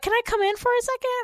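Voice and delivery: very high, squeaky, cringy put-on voice. Imitating a girl at the door of your room, squeaky fake voice. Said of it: "It was kind of like a squeaky".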